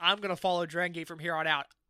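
ordinary talk, nothing marked

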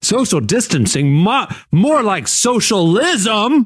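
mock-incredulous loud voice. Retelling a man behind them in line, imitating a loud, incredulous man. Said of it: "he goes real loud, just for everybody, just incredulous".

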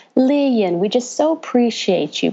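put-on proper, polite Southern accent. Retelling what a man kept saying at a meeting, in a southern accent. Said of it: "kept saying in the Southern accent".

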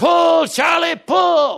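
very loud, very high, rasping yelled call. Telling a joke, the old farmer calls out behind the car in the ditch, retelling a very loud shout. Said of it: "in a very loud voice".

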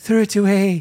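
put-on tiny wee accent voice. Advising a listener to throw the towel away, in a tiny wee accent. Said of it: "in an accent, ... Like a tiny wee fatty".

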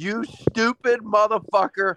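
top-of-the-lungs yell. Speaker recalls a missed field goal at a sports book, retelling a full-lung yell. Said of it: "yelled at the top of my lungs".

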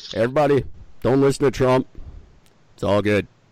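calm, reassuring, easy and steady. Imagining the president speaking today: Obama impression. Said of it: "if he would get up right now and go".

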